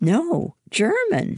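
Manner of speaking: very high, proud, high-pitched tone. The narrator answers Hannah's question about the stories, speaking proudly. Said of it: "I said proudly".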